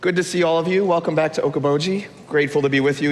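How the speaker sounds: rough, croaky voice. A lecturer welcomes the class back, speaking with a shot voice. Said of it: "my voice is shot".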